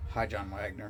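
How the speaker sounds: dead, flat monotone with no feeling at all. Retelling what a three-year-old said when a viewer popped up: imitating Jensen's emotionless voice. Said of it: "like emotionless".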